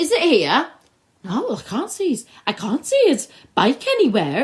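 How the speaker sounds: terrible put-on Welsh accent, sing-song and high. Acting out characters searching for a bike: terrible Welsh accent. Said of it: "That's a terrible Welsh accent".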